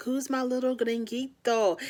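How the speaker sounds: put-on high-pitched baby-talk voice. Retelling how a couple talk to each other: imitating Jasmine's baby talk. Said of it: "they talk in that baby talk with each other".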